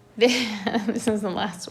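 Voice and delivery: speaking through laughter. Explaining a probability example to learners, laughing while talking. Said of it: "I'm sorry I'm laughing".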